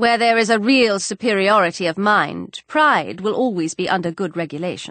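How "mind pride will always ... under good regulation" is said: ordinary delivery, nothing marked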